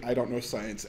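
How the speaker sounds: normal talking voice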